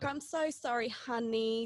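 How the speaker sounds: high, over-the-top, syrupy-sweet fake niceness, sarcastic. Showing how to annoy someone by apologizing: over sarcastically nice. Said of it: "over sarcastically nice".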